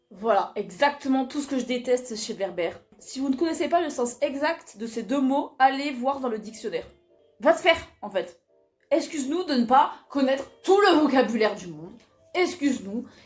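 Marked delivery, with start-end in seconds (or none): 7.4-13.1 irritated, annoyed, worked-up, raised voice. Reacting to a line just read from a book: annoyed. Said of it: "je suis énervée".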